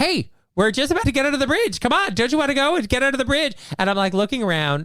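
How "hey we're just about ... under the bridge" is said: screaming, yelling, pitched higher. Retelling running into a bar and urging strangers: retelling own screaming. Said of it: "I've been screaming at them".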